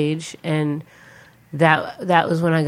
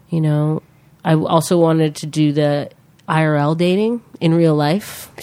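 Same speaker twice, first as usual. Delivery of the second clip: plain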